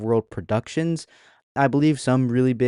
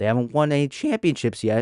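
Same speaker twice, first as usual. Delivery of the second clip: breaking voice, cracking mid-line. Talking to viewers about a team, voice cracking. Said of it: "Ooh, voice crack".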